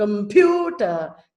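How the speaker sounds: long, loud stress on pu in computer. Teaching word stress, saying computer with a long, loud pu. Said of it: "See, pew is louder".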